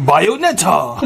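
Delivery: mock elated, euphoric game-announcer call-out. Imitating how the announcer calls out Bayonetta, mock-euphoric announcer call. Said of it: "Er sagt immer so richtig so schön euphorisch".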